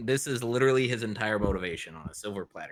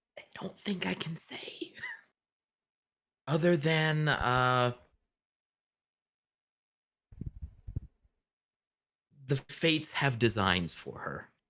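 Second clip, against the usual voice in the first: guarded, secretive, confidential tone, pitched higher; 5 semitones higher than usual. The narrator voices Rule answering a question about her, in a very hushed tone. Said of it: "in a very hushed tone".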